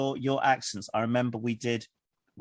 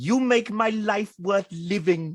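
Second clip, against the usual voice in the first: put-on big, strong Welsh accent, high and loud; 9 semitones higher, 5 dB louder than usual. Retelling what a kid once said to the speaker, in a big welsh accent. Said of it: "in a big Welsh accent".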